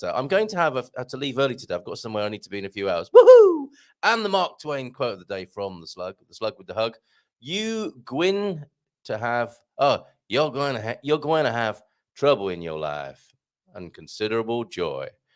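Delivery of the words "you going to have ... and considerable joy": clumsy, attempted put-on Southern accent. Reading out the Mark Twain quote of the day, attempting a southern accent. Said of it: "I can't do this southern accent".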